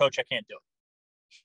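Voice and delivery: very slow, acted, tearful near-sob. Retelling a voicemail from a player, imitating someone almost crying. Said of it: "He's almost crying".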